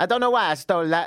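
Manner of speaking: badly done put-on Italian accent. Retelling what he said after stealing something: bad Italian accent. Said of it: "it's pretty offensive Italian at that".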